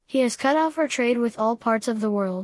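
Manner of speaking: ordinary delivery, nothing marked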